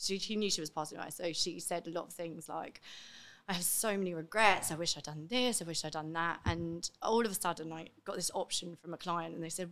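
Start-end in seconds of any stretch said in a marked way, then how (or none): none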